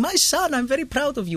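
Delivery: bad, very high-pitched rubbish Australian accent. Quoting his dad in the audience, in a bad Australian accent. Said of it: "that was rubbish Australian accent".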